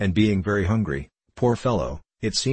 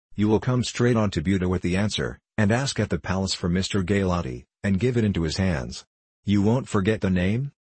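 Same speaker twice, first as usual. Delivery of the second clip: plain reading voice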